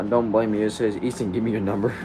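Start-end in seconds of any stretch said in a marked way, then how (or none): none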